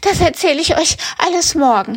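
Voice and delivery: gasping, high, breathless panting, completely out of breath. Narrator reads Karl-Heinz the rabbit answering his siblings, gasping out of breath. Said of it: "japst Karl-Heinz völlig aus der Puste".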